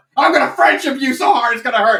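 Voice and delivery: put-on pushy friendliness. Describing a reinterpretation of Vivian, doing a mock aggressively friendly Vivian. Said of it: "She's like aggressively friendly".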